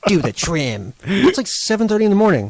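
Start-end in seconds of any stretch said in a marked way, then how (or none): 0.1-0.9 put-on bitchy, snappish, irritable tone. Mimicking how mom said something early one morning, in a mock-bitchy tone. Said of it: "You said it in a bitchy way".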